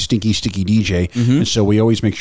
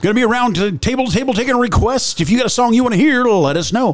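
DJ announcer voice, much higher; 14 semitones higher than usual. Explaining how their DJs take requests, slipping into a DJ voice. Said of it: "there was my DJ voice right there".

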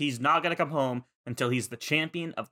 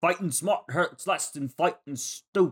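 put-on cheesy New York accent, pitched up; 5 semitones higher than usual. Retelling a Pokémon fight, quoting a line in a cheesy New York accent. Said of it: "What was his accent?".

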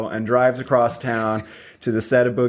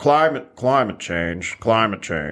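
low, put-on Arkansas accent, voice dropped down. Joining a joke impression about climate change: low Arkansas voice. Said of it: "it's another low voice".

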